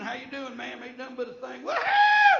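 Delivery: rowdy, loud, very high whooping yell. Retelling what people at a country bar shout: imitating someone screaming.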